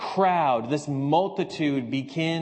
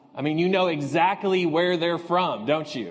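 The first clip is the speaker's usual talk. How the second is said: ordinary delivery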